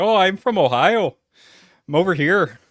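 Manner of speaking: put-on Canadian accent, slow, high, drawn out. Host imitating a woman from ohio in a video, in a canadian accent. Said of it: "I don't know why I did a Canadian accent".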